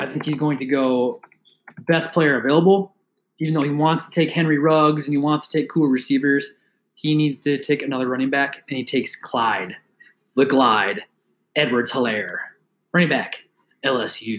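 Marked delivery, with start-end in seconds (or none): 8.7-14.4 deep, bad announcer voice, announcement style. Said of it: "I'm not good at that voice".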